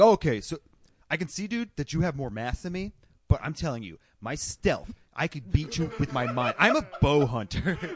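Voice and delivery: put-on, adopted man's voice. Speaker quotes how Joe would answer, doing a Joe Rogan impression. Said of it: "the guy with the Joe Rogan impression".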